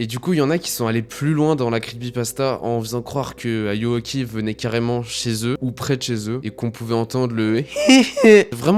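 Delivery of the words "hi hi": very high, loud squeal on "hi". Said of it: "j'ai la voix explosée".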